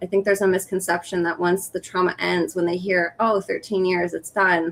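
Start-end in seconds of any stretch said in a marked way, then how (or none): none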